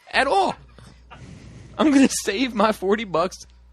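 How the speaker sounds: loud, high-pitched, worked-up angry rant.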